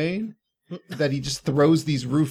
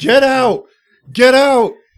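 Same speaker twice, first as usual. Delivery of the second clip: very loud, very high, shrill, drawn-out yell; 10 semitones higher, 12 dB louder than usual. Retelling a scene where a man yells at a woman, retelling a yell. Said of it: "So now he yells at this woman".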